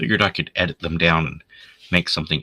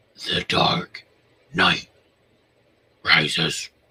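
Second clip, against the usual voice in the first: dark caped-vigilante hero voice.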